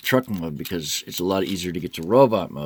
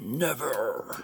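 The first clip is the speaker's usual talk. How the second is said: high robot voice, "never" stretched out, pitch rising; 6 semitones higher, 7 dB quieter than usual. Posing a toy for an action pose, answering a foe: Optimus Prime voice. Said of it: "my Optimus Prime voice".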